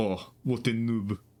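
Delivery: put-on very drawn-out, slow, odd French accent. Quoting a man who said this to everyone, in a weird French accent. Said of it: "kind of like weird French accent".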